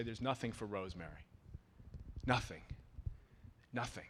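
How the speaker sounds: put-on trailing-off voice. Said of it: "My mother's voice would trail off".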